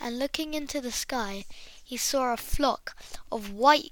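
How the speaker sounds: ordinary delivery, nothing marked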